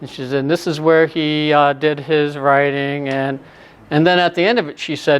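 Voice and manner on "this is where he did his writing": put-on flat monotone, slower. Quoting the woman showing Doctor Johnson's library, imitating a monotone voice. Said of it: "it was very monotone".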